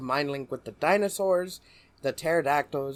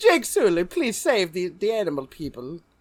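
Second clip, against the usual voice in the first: put-on Caribbean accent, higher and louder; 4 semitones higher, 6 dB louder than usual. Joke about how the girl in the movie says Jake Sully's name, in a Miss Cleo voice. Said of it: "she sounds like Miss Cleo".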